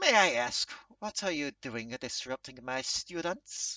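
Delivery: put-on elderly cat-person character voice. From below, an elderly catfolk questions the newcomer disrupting his students, in an elderly catfolk voice. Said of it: "there's an elderly catfolk looking up at you. / there's an elderly catfolk looking up at you. Cane in one hand, / as he's kind of like pointing at you with the other. / there's an elderly catfolk look".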